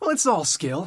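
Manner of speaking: high, loud put-on voice that cracks. Describing how he does his voice: raised higher-pitched voice. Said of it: "take my voice to a bit of a higher pitch and go like".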